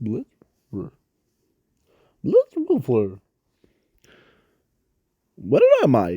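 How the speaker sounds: werewolf alien voice with swooping, swinging pitch. Telling a what-if story, the speaker voices the character waking up: Blitzwolfer voice. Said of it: "every time I start trying to talk in that voice".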